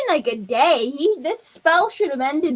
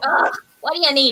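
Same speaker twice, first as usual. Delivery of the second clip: grumbling goblin creature voice. Voicing another goblin who is called to the door: goblin character voice. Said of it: "Another goblin. And he's like".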